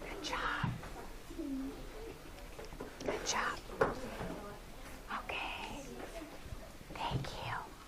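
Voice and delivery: very quiet, under-the-breath whisper. Teacher thanking groups of students one by one: whispering.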